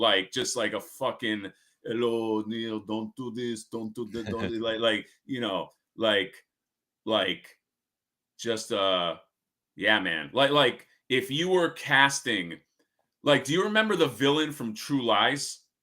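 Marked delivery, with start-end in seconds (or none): 1.8-4.6 put-on heavy Iraqi Arabic accent, laid on thick, soft.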